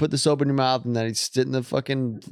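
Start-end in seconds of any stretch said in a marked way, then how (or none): none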